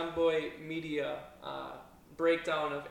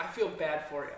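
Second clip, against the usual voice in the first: ordinary delivery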